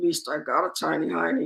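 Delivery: soft, barely voiced mumble under the breath. Retelling a student's cheeky reply to the teacher: imitating a muttered aside. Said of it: "under his breath".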